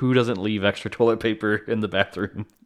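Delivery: plain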